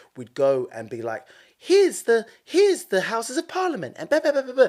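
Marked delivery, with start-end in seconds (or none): 1.6-4.7 put-on very high, loud little-kid voice. Retelling child voice-over work for a sightseeing bus: imitating own prepubescent voice. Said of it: "my prepubescent voice".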